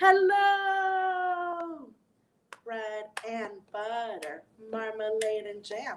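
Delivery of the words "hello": as loud as possible, much higher. Leading a group rhyme where everyone says hello as loud as they can. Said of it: "Let's say hello as loud as we can".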